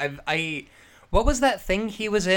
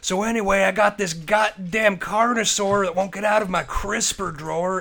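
angry swearing rant. Imagining Stone Cold Steve Austin complaining about a dinosaur: Stone Cold Steve Austin screaming. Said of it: "Stone Cold Steve Austin being like".

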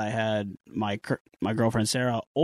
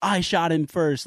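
high, screamed, yelled outburst; 6 semitones higher than usual. Retelling a brother playing Fortnite who slams his desk: imitating someone screaming. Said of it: "screaming at the top of his lungs".

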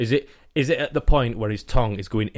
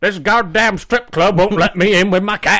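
loud, very high-pitched put-on American Southern accent; 9 semitones higher, 7 dB louder than usual. Imagining a 911 call, voicing the caller in a put-on American southern accent. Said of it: "I don't know what accent that was".

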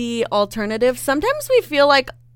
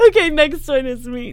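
words spoken while laughing; 2 semitones higher than usual. Taking the next turn in a guessing game, laughing while talking. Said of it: "I need to catch my breath 'cause I'm laughing".

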